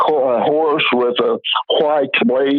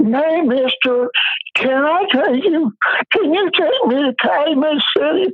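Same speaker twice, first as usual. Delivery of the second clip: put-on very high, tipsy, sloppy drunken voice; 14 semitones higher than usual. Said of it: "in a drunken voice".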